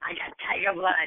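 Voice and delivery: put-on manic celebrity-style voice. Answering a request to do an impression: Charlie Sheen impression. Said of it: "what is your impression of the Charlie Sheen?".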